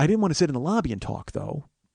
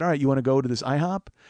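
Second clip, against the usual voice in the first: ordinary talk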